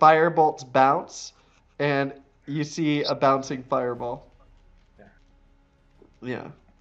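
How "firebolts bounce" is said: ordinary talk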